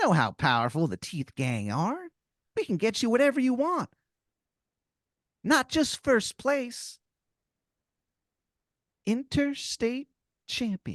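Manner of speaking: very high pitch. Telling a made-up story, voicing a grinning talking tooth: Timmy the Tooth voice. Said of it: "He goes".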